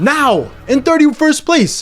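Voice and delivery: high scream full of excitement. Going through a team ranking list and reacting to a placement, screaming.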